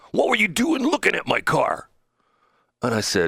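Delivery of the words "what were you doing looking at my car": high, shrill, loud, obnoxious voice. Retelling an elderly gentleman confronting him over his car: imitating a loud, obnoxious voice. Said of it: "in a very loud and obnoxious voice".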